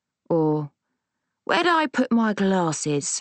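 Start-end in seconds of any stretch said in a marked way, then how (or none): 1.4-3.2 put-on slow Cockney accent, old woman voice. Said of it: "in the Cockney accent she'd never lost".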